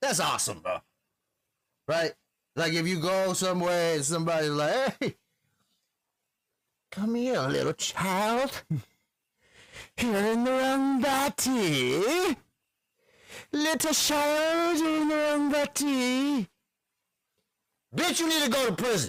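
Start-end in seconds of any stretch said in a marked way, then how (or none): 5.0-19.1 very high, crazy storybook witch voice, body drawn out. Imitating a stranger calling to a child: Disney witch voice. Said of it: "They sound like, uh, Disney witch people".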